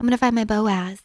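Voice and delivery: imitated girlish voice. Quoting what girls often say, imitating girls' tone. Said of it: "I've heard that a lot from girls".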